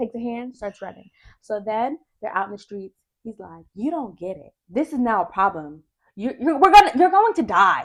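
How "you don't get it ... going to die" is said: very loud, animated, swooping, rising yell. Retelling a man yelling at a woman out in the street, retelling a yell. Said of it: "He's like yelling at her in public".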